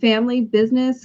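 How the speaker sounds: ordinary delivery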